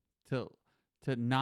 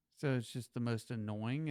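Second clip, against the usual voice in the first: ordinary delivery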